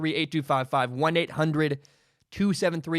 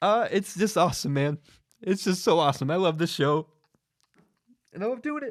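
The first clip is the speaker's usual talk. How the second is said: tearful speech, crying while talking. Thanking viewers of the show on camera, crying while talking. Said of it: "they're really coming".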